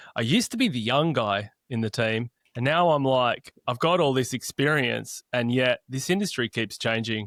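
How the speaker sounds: ordinary delivery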